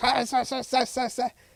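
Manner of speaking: very high voice, words forced through clenched teeth. Telling Ceci what she does when she gets mad, imitating Ceci talking through teeth. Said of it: "she talks through her teeth".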